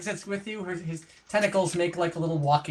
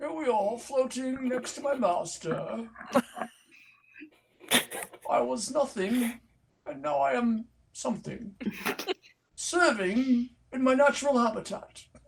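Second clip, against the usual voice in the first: put-on old-man nature-narrator voice, pitched up; 6 semitones higher than usual. Voicing a cuttlefish in a role-play, asked to talk like David Attenborough. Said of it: "I've never done a David Attenborough before".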